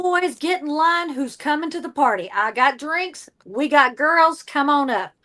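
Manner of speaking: put-on flirty, inviting southern accent. Podcast host riffs on a haunted brothel, calling people to the party; Southern accent. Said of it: "that whole southern accent thing going on".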